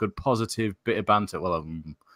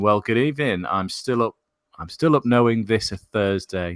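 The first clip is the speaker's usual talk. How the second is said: ordinary talk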